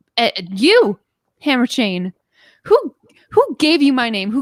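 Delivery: livid, seething outburst with swooping pitch. Voicing Bloom looking for someone to blame: livid, as Bloom. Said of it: "Bloom is livid".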